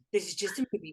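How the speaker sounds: acted fear, self-calming tone. Retelling being in the movie theater at a scary film, retelling nervous self-reassurance. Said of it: "I was in the movie theater like".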